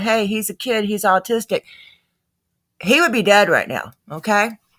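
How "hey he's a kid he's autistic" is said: plain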